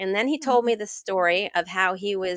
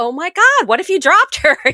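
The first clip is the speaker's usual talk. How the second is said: acted very shrill, very loud horrified cry; 9 semitones higher, 11 dB louder than usual. Speaker retells her reaction to a man dipping his baby in the ocean, retelling her horror. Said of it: "And I'm just horrified because I'm like".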